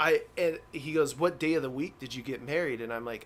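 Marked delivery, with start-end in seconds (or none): 1.2-2.8 put-on aggressive, mean tone. Retelling a customs officer's questions about a wedding day: imitating an aggressive customs officer. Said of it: "he's being mean or aggressive".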